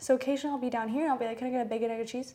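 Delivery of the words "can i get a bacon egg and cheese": words run together, rattled off very fast. Ordering a bacon, egg, and cheese: run together really fast. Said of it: "Like, really fast".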